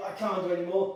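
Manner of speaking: normal talking voice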